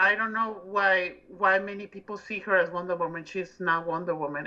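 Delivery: plain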